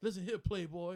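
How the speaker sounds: loud, forced, unnatural put-on wrestling-promo voice. Retelling how a wrestler changed up his talk: imitating forced put-on talk. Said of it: "when he changed up his talk".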